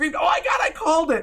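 mock shrieking outburst, high and drawn-out. Retelling own reaction the day the trailer came out: retelling a scream. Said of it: "I screamed".

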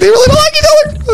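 very high, thrilled squeal. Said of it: "I was like".

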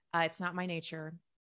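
ordinary delivery

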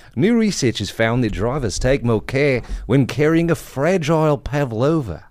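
reading aloud in an Australian accent. Reading a research finding aloud in an Australian accent. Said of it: "I'm going to read it in an Australian accent".

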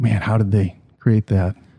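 ordinary talk

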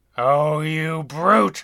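words let out as a hiss. Narrating a monkey recoiling from glowing eyes in a sewer: hissing. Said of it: "the monkey hissed".

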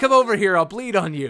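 loud, high-pitched shout.

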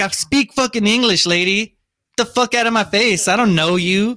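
acted, heated, furious, high-pitched angry outburst. Retelling a fight, answering a lady who said calm down: retelling an angry outburst. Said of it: "And I got more mad".

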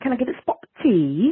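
so-so fake British accent. Picturing themselves happy while talking in another accent: fake British accent. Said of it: "in a British accent".

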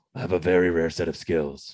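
gravelly, flat, dead-level monotone. Quoting a famous movie line in Liam Neeson gravelly monotone. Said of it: "He's always has that like monotone, like gravelly voice that like never changes".

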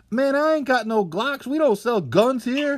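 shrill, loud, very high-pitched shout. Retelling what the guy at the checkout yelled: imitating a clerk yelling. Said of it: "the guy starts yelling".

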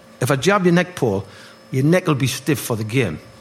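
ordinary talk, nothing marked

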